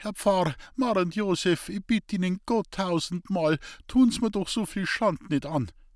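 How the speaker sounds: high, faltering, stumbling stammer. Julal pleading with the priest, stammering. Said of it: "mit kreidebleichen Lippen stammelte".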